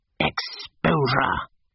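sharp, hissed single word. Reading a novel, a man answers a woman's cried question: hissed. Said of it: "hissed Mr. Eager".

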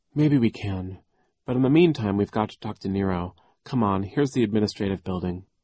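usual speaking voice

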